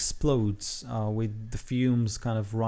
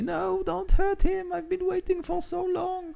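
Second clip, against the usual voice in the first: put-on elderly woman's voice, much higher. Voicing an old lady heard as the man is nearly down, old lady voice. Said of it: "you can hear the old lady".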